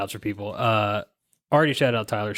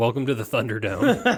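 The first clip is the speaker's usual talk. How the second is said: put-on flat deadpan delivery, faster. Host recalls walking in tonight, imitating Justin's deadpan greeting. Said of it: "Justin just looks at me deadpan".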